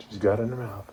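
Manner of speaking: soft golf-course style whisper. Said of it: "I'm whispering like they do at the".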